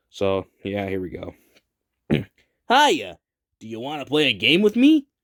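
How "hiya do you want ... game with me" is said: high, swooping, loud and bouncy cartoon voice. Voicing a character's lines in a story with a Sonic voice. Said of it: "I might just gonna have to use my Sonic impression".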